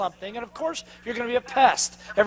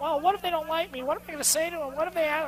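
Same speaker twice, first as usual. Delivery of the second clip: small, soft, pitched-up inner voice; 6 semitones higher, 8 dB quieter than usual. Acting out the little voice in someone's head: little inner voice. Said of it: "typically it's the little voice going".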